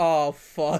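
ordinary talk, nothing marked

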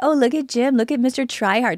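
high, playful, teasing, ribbing tone. Recalling teasing the listener about pottery skills last week: retold teasing. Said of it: "And I was teasing you".

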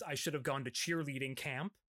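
ordinary talk, nothing marked

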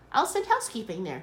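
ordinary delivery

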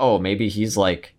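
ordinary talk

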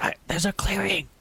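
low, hushed whisper. The navigator stops at a clearing and calls back to the group, in a low whisper. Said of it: "in a low whisper".

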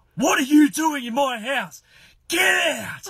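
very high, shrill, loud, enraged scream. Retelling how the dad burst in and found a boy: imitating the dad screaming. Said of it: "he just screams at Harry".

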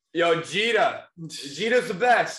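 very high, loud, put-on Boston accent. Quoting Yankees fans from TikTok interviews, Boston accent. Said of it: "you saying that in a Boston accent?".

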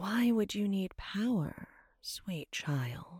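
high, hissing, disembodied voice. Narrator reads a voice answering a girl in a cave, hissing voice. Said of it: "The voice hissed".

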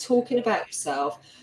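plain

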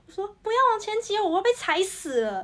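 acted-out piercing, shrill shout, pitched way up. Retelling being crushed in a falling crowd, re-enacting a yell. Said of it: "然后我就直接大叫".

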